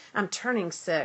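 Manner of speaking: plain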